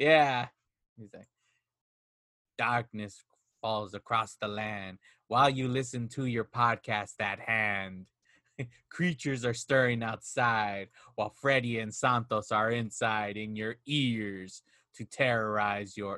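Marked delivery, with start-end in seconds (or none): 2.6-16.2 very low, soft, hushed horror narrator voice. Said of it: "the [name], the when he does the Thriller".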